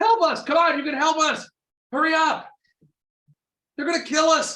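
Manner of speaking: very high, desperate, frantic cry. Voicing prisoners in a back cell calling for help: desperate cry for help. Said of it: "You hear from the back cell".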